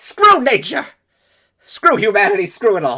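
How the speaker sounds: very loud, high-pitched, shrill screaming intense rant. After apologizing about the other's lost tape, an intense outburst. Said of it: "that was intense".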